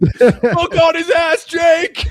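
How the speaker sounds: very loud, very high excited yell while chewing. Recounting getting off the couch mid-chew after a dunk, retelling own yell. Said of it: "started yelling like mid chew".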